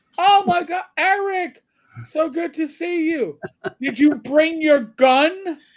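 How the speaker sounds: very high scream, word "gun" drawn out. Retelling an aunt greeting him at the airport: imitating aunt screaming. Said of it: "she's deaf, so she's screaming this".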